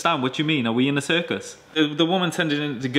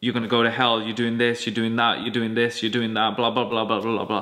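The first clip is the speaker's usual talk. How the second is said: relentless nagging lecture, going on and on; 5 semitones lower than usual. Imitating people pressing warnings on someone: imitating someone bombarding with warnings. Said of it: "you come bombarding them".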